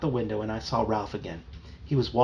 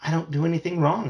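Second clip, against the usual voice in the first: indistinct, mumbled, pitched up; 5 semitones higher, 3 dB louder than usual. Reading a story aloud, the girl answering her mother: mumbling. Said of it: "I mumbled".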